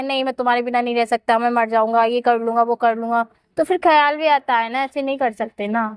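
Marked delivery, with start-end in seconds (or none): none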